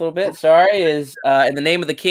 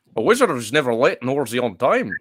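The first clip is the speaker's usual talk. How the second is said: put-on deep, low, villainous, strong Scottish accent; 4 semitones lower than usual. Speaker quotes a wizard's line to the other hosts, Sean Connery impression. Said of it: "Your Sean Connery is more of a Bane with, with a Scottish accent".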